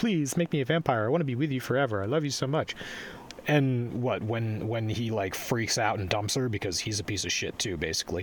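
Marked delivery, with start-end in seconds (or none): 0.0-2.7 put-on rushed, repeated pleading, fast and pitched up. Describing a movie heroine who keeps begging Edward, imitating a character begging. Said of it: "she keeps on begging".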